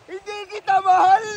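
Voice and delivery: put-on high-pitched, loud drunken yell.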